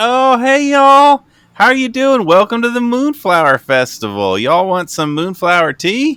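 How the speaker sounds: very high, loud, calling-out voice. Voicing Cletus, in were-rat form, welcoming the group to the festival: Cletus voice. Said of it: "comes up as Cletus".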